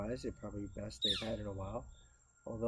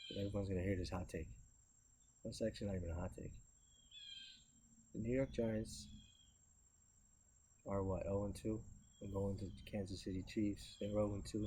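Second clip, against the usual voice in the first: hushed, secretive half-whisper throughout; 3 dB quieter than usual. Talking sports out where it's quiet, half-whispering. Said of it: "Now I gotta whisper".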